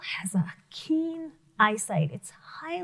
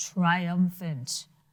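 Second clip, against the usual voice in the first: voice dropped into a low, deep bass register; 6 semitones lower than usual. Showing a class how to say the word: low voice. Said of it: "Say it low".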